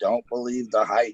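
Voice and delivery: normal talking voice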